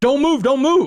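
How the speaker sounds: put-on, shrill, very high screaming. Recounting being arrested, acting out the cop: imitating a cop screaming. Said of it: "he's screaming".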